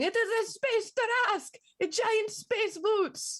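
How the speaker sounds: very high, slow, drawn-out frantic panicked alarm. Narrating to the players, voice a telepathic message: Strahd's telepathic panic. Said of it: "a telepathic panic of Strahd going".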